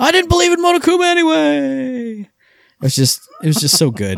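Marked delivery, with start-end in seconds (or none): 0.0-2.2 put-on yelled cry, pitched way up high. Retelling what a character on the run yelled out: imitating someone yelling. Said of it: "he yelled out".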